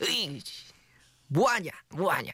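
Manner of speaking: high-pitched, scolding put-on grandma voice. Recalling a grandmother's scolding for eating soup left-handed, imitating grandmother scolding. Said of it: "성대모사가 잘안 되네요".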